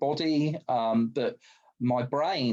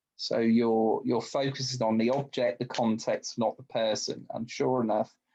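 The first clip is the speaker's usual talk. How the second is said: plain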